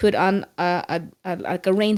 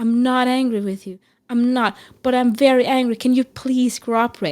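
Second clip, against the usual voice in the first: mock frustrated, exasperated anger mixed with apologetic pleading; 4 semitones higher than usual. Acting out what they yelled at him at the time, retelling angry yelling. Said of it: "the more I yell".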